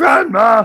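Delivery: put-on high, loud, cracking boy voice. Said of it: "my voice is cracking".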